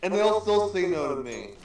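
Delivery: high-pitched, half-hearted cartoon character impression.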